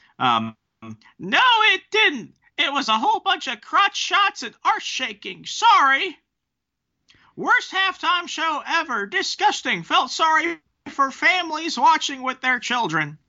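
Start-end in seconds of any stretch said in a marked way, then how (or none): 1.2-13.1 put-on older-woman voice, very high and swooping. Reading some comments aloud, doing the commenters' voices. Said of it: "I'm going to try and do the voices".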